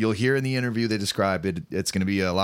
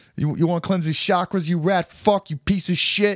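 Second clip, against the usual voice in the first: put-on heavy old-school Italian New York accent, very high-pitched; 10 semitones higher, 4 dB louder than usual. Joking about aggressive New York hippies, thick Italian old-school New York accent. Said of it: "in a thick like Italian old school New York accent".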